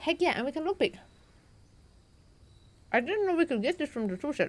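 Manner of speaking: talking with food in mouth, chewing while speaking. Playing a game while eating a banana, commenting aloud; talking with food in mouth. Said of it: "Sorry for talking with food in my mouth".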